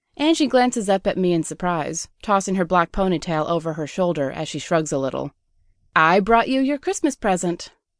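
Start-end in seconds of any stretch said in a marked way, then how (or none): 6.0-7.7 proud, declaring tone. Angie presents a wolf as a Christmas present: proudly declaring. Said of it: "she proudly declares".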